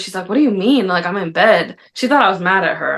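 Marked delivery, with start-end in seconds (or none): 0.3-1.8 mock slightly defensive, taken-aback, self-justifying tone. Retelling the wife's reply on the phone from bed: imitating someone sounding defensive. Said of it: "she got a little defensive".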